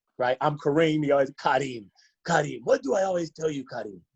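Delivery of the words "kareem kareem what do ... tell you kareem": put-on Nigerian English accent. Recalling what an older mentor used to tell you after games, quote him in a Nigerian English accent. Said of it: "I'm going to do the little accent".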